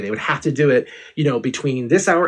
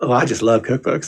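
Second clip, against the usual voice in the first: mock muttered delivery, under the breath. Recapping a campy TV scene, quote a character, retelling an under-breath line. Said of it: "delivers kind of under his breath".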